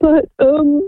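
tearful, choking up, voice breaking with audible crying.

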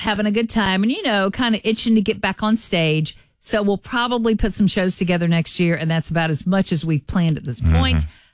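ordinary delivery

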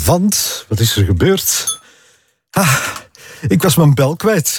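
slightly out of breath. Talking to the listeners right after arriving, a bit out of breath. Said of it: "ik ben een beetje buiten adem".

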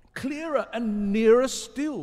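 very high, very loud joyous cry. Narrator reading Rat to Mole as Mole rows, crying out joyously. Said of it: "cried Rat joyously".

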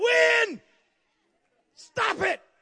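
mock high shout. Preacher retells a man on a ship's stern ordering the wind: raised voice. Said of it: "raised up his voice and said".

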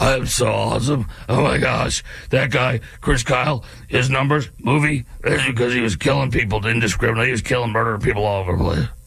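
rough, gravelly voice. Mocking a critic who boasts, imitating Graham Plattner's gravelly voice. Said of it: "in your gravelly voice".

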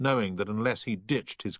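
ordinary delivery

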